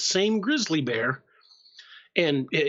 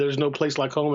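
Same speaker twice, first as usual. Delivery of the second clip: ordinary talk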